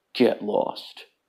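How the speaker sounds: deep, hushed, breathy voice. Slouch the Unicorn turns to the gremlin creatures, deep Slouch the Unicorn voice. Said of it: "speaks in a deep voice".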